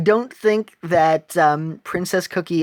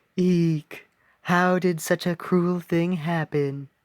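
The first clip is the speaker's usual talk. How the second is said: sweet, slow, drawn-out storybook princess voice; 4 dB quieter than usual. Voicing a character's line in a playthrough, in a Princess Peach voice. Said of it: "that's my Princess Peach voice".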